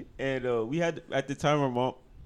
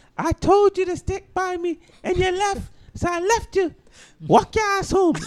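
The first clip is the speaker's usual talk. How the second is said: put-on very high, loud, scolding Jamaican accent; 6 dB louder than usual. Retelling what your mom said when you called her, use her Jamaican accent. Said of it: "in her Jamaican accent".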